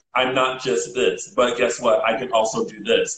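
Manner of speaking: ordinary delivery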